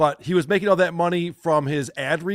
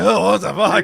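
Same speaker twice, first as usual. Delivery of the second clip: put-on loud, frazzled, fed-up, exasperated outburst; 5 dB louder than usual. Commenting on a man asking viewers for money, speaker imitates his stressed outburst. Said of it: "He's all stressed out".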